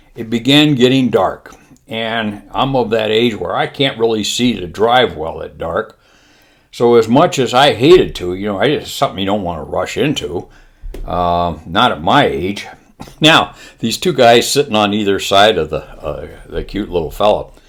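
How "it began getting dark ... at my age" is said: normal talking voice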